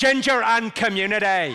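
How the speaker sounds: loud Northern Irish Belfast accent. Teaching the audience a practice phrase, the speaker demonstrates a Belfast accent. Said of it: "get the Belfast accent right".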